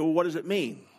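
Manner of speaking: ordinary talk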